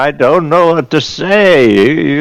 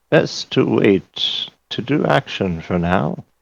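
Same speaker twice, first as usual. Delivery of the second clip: secretive, hushed whisper under the breath; 2 semitones lower, 7 dB quieter than usual. Leaning close in character to suggest waiting: whispering under breath. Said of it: "I whisper under my breath".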